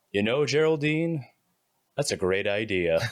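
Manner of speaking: flirtatious, flirty put-on character voice. Voicing a character after a calming stim, speaking to Geraldine: flirty put-on voice. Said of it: "What happened to his voice?".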